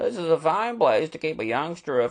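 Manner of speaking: plain reading voice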